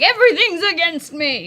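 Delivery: mock very loud, swooping, high outcry. Voicing a hero in pain who curses the heavens: cursing the heavens. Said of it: "He curses the heavens".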